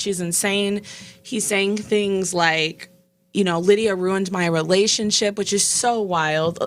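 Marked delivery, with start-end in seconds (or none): none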